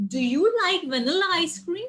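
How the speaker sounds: questioning lilt, pitch climbing on "cream" in "ice cream". Speaker explaining yes-or-no questions demonstrates one, rising intonation at the end. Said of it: "there's a rising intonation in the end".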